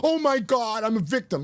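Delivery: slow, mocking, sneering, self-pitying tone. Retelling how someone reacted after breaking sobriety: mocking someone playing victim. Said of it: "you took a sip of a drink and you're going".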